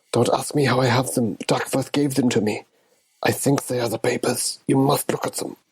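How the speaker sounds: whispering in character. Voicing a character handing over secret papers to Montrose: whispering in character. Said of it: "to whisper to Montrose".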